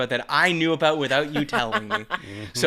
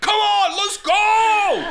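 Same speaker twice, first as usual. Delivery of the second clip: very high, loud, stretched-out, excited triumphant scream; 5 dB louder than usual. The speaker retells a player after his game-winning shot: retelling an excited scream. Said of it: "he screams like".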